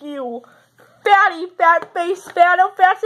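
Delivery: put-on acting drunk. Answering "are you drunk" in a skit, insulting the other person: acting drunk. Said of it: "yes, I'm drunk".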